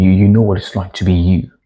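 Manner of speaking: ordinary talk, nothing marked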